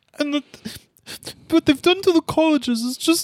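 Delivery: very high, blubbering, weepy, tearful sob-voice. Mocking a host who cries every episode: mock-crying imitation. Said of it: "He cries every episode".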